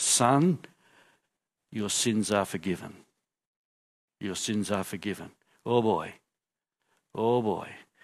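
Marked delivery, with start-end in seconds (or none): 0.0-5.3 very low, quiet, soft but firm. Narrating a story, quoting words spoken to a man for everyone to hear: quiet but firm. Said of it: "says to the man quietly but firmly".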